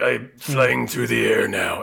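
odd, silly, rough, creaky cartoony bird voice. Describing a movie trailer, the speaker quotes the bird in a weird cartoon Frank Welker voice. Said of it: "the bird with its weird cartoon Frank Welker voice going like".

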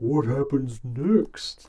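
mocking, dumb-sounding character voice, pitched high. Mocking a reading scene from Beauty and the Beast, stupid Beast voice. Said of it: "In his stupid Beast voice".

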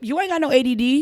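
dismissive mom voice. Retelling what mama told them quickly: imitating mom. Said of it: "My mama told me quick".

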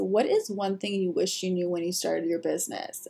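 ordinary talk, nothing marked

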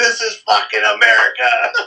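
very high, ragged, raspy, thrilled scream. Reminiscing with a friend about a wild ride, imitating the friend screaming. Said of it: "You were screaming".

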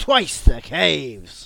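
booming, theatrical Shakespearean actor voice. Repeating a joke line as a Shakespeare character. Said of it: "that's my, uh, Shakespeare character".

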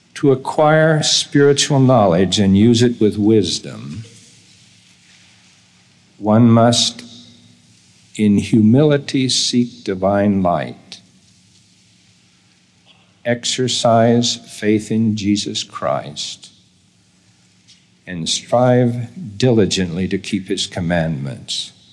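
slow, deliberate reading. Reading a guiding statement so note-takers can record it: reading slowly. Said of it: "I'm going to read it slowly".

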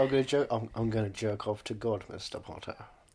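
put-on, Cockney-tinged East End accent, character voice. Doing Alan Rickman trying a Cockney accent: Alan Rickman impression. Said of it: "Alan Rickman was there. He's like".

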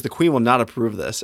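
usual speaking voice

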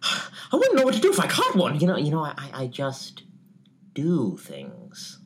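high, erratic, swooping sing-song with jumping pitch. Offering a take on an impression: Heath Ledger's Joker voice. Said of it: "offer my take on it".

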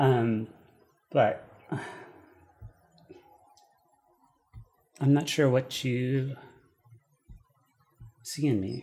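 very sad, close to crying. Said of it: "I look very sad".

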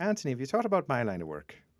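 high, lilting, sing-song Irish brogue. Retelling the parish priest's question in the sacristy, imitating Father Seamus Walsh's Irish accent. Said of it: "I loved his Irish accent".

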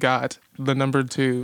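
ordinary delivery

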